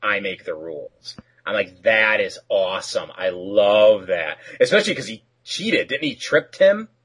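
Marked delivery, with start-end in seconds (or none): 0.0-1.1 soft, hushed, low-key comic-book superhero voice. Retell how he answers after the list of rules, in the Batman voice. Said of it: "he goes in the Batman voice".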